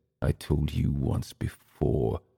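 through clenched teeth. Narrating a story, reading Emil's reply through clenched teeth. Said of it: "Through clenched teeth".

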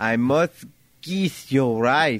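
put-on Spanish accent. Acting out a Latin pickup line on request: put-on Spanish accent. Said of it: "You wanted Spanish, I gave you Spanish".

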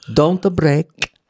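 whispered put-on Italian accent. Retelling a whisper to a fellow performer during a sketch: whispered put-on Italian accent. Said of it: "I whisper, I keep the Italian accent".

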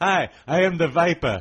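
put-on very loud, belted, campy German accent.

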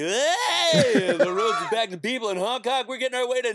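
very high radio morning DJ patter. Parent recalls driving their sons to school, doing a morning DJ voice. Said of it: "I do my morning DJ voice".

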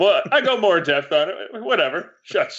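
high, mock huffy and offended dismissive tone.

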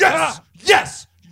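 shrill, high, loud, effortful straining shout. Describing a man who screamed on every rep, imitating someone screaming. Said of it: "he's literally screaming as he's doing every rep".

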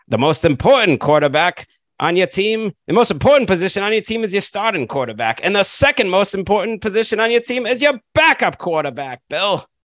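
put-on very high, old-timey 1920s-style announcer voice. Quoting an NFL Network analyst to Bill, in an old-timey Charlie Casserly impression. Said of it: "That sounded like he was from the 1920s".

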